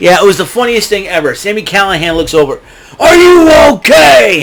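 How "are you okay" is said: very high, loud, sarcastic tone. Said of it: "Being sarcastic".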